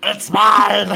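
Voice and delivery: shrill, high, loud, showy put-on voice. Joking with friends about copying Gollum at school: Gollum voice. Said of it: "I'm glad you like my impression".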